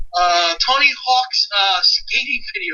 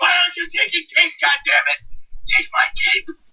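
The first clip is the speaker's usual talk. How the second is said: excited put-on robot voice, higher; 5 semitones higher than usual. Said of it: "He's just like".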